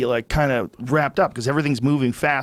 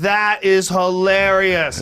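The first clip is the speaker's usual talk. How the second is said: mocking yell, much higher, louder, slower; 6 semitones higher than usual. Retelling laughing at a man who showed his tattoos, the speaker retells a mocking yell. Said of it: "And so I'm yelling this at him".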